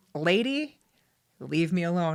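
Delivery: slow talking-animal fox voice. Retelling what a tailless fox seemed to say: voicing a fox. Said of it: "he turned around, he was like".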